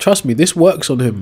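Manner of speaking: high, loud, excited insistent voice.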